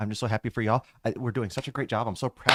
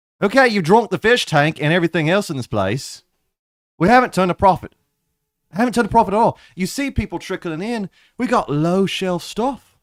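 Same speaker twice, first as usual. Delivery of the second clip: put-on raised, high-pitched, drunken slurring pirate voice; 8 semitones higher, 8 dB louder than usual. Voicing a character in a narrated scene, in a Jack Sparrow voice. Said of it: "Why do you sound like Jack Sparrow?".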